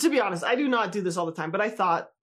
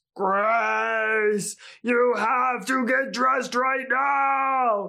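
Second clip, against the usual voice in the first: very slow, dragged, over-the-top fake angry stern voice; 3 semitones higher than usual. Retelling turning getting dressed into a game, in an exaggerated mock-angry loud voice. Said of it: "in this exaggerated, loud, angry voice".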